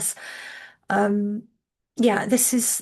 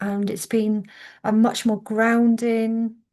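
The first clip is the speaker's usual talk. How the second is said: usual speaking voice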